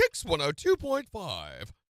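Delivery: snooty put-on voice. Radio caller asked by the hosts to say the station name in a very uppity voice. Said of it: "do it in like a very uppity voice".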